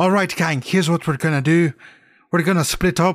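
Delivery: Irish-sounding attempt slipping into put-on Scottish accent. Asked to do a Scooby-Doo line in an Irish accent, Irish accent coming out Scottish. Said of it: "now you're Scottish".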